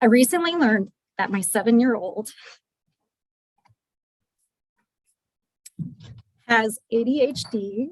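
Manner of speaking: crying, tearful, breaking voice. Sharing a personal story with listeners, crying. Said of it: "I don't know why I'm crying".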